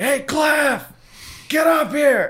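very high, furious, angry shout. Retelling how the boss called him up the ladder: imitating an angry yell. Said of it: "he starts yelling all angry".

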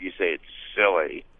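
the word silly dropped low with a dismissive falling pitch.

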